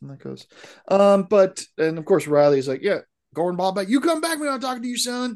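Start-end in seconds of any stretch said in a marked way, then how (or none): 2.8-5.4 very high put-on Tennessee accent. Retelling what Riley says to Gordon Bombay: Riley with Tennessee accent. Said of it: "he's from Tennessee".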